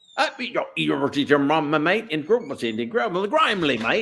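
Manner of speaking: fake Australian accent speaking gibberish. Retelling how a man who speaks no English imitates Australians, in fake Australian accent. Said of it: "Like he'll do Australian".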